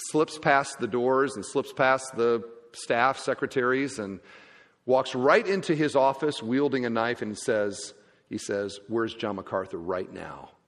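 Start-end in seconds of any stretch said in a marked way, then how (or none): 8.9-10.5 very low, mock menacing, threatening voice. Retelling a knife-wielding intruder's demand in an office: imitating a threatening voice. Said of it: "in a very threatening way".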